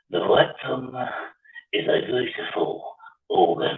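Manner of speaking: very slow, measured, deliberate film-character voice. Speaker recalling a scene, doing an impression of the man talking. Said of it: "I used to do impressions of him".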